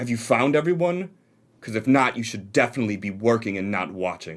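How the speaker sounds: curt, angry, snapped delivery. Voicing a leader who snaps at onlookers to get back to work: snapping at the group. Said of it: "snaps to you guys".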